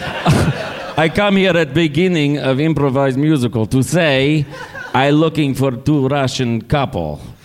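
put-on Russian accent with broken English. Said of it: "I'm really Vladimir".

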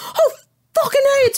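play-acted, very high screamed outburst. Recalling watching it for the first time, retelling own scream. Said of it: "And I'm screaming like".

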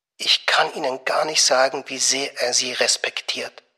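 hushed whispering. Narrator reading a woman speaking to a man: whispered. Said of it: "flüsterte sie".

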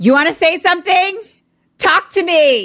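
shrill, very high, loud shouted yell. Retelling a story, voicing a woman yelling out the front door: imitating someone yelling.

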